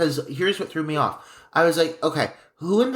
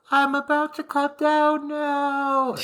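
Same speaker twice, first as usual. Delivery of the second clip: very high, very slow, drawn-out faraway call; 11 semitones higher than usual. Retelling a character calling down from the top of a slide: imitating a distant-sounding call. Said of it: "her voice is, it's, like, distant".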